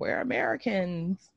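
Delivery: imitated creepy voice. Speaker recalling a scene to a listener, imitating a woman's creepy voice. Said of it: "in her creepy ass voice".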